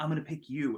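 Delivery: hushed, panicky, half-whispered aside. Retelling how a panicking guy told another girl his pick: imitating a half-whisper. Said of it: "whispers to this other girl".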